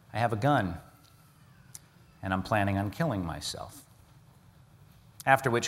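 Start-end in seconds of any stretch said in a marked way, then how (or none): 0.2-3.8 mock heavy, hopeless, downcast, quiet, somber, despondent voice. Retelling a man's words from the other end of the line, imitating a somber, despondent man. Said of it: "as the man somberly and despondently said".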